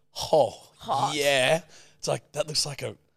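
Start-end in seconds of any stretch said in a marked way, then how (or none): 0.3-1.6 mock impressed, pleased tone, higher and louder. Imitating a girl who gets an unsolicited picture: imitating a girl's pleased reaction. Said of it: "no girl's ever picking up that phone and going".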